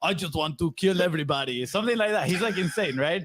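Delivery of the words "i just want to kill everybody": put-on Russian accent, higher pitch. Retelling what a russian fighter says, imitating a russian fighter's accent. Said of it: "I don't know how to make a Russian accent".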